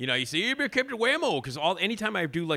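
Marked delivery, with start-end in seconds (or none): 0.4-1.4 wacky DJ voice, higher. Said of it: "the wacky D J voice".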